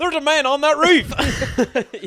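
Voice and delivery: thick put-on Southern drawl, very high, loud, slow. Performing a bystander's warning after being asked: put-on southern accent. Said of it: "do the southern voice".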